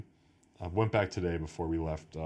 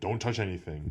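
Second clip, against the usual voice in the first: put-on strict German accent. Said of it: "in her strict German voice goes".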